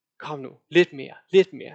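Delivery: ordinary talk, nothing marked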